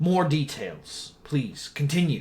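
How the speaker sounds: deeply troubled, badly worried, urgent, pressing tone. Voicing a concerned character asking for more details: voicing a very concerned NPC. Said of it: "He looks extremely concerned".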